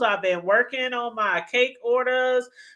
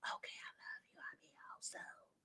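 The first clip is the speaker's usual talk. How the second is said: hushed, sweet, whispered voice. Acting out a secret phone call in another room: imitating someone whispering. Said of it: "started whispering".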